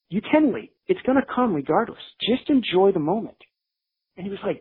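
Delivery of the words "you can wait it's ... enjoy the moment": impassioned, passionate delivery. Retelling a resident assistant's advice: imitating a passionate plea. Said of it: "passionate about it".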